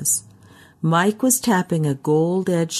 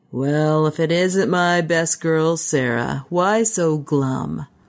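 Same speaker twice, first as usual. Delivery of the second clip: put-on sounds rough and drunk. Narrator reads a man greeting Sarah at the bar, in a rough, alcohol-soaked voice. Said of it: "that rough, alcohol-soaked voice".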